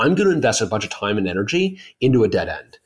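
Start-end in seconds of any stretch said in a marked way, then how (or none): none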